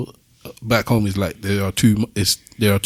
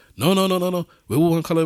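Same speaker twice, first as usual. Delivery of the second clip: put-on adamant, firm tone, higher; 9 semitones higher than usual. Retelling how a man rejected the idea of a colour hierarchy: imitating an adamant denial. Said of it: "he was very adamant".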